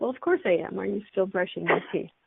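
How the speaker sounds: mock sarcastic, facetious tone. Retelling a reply to people who keep asking about running: imitating a facetious reply. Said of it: "she just wants to be facetious".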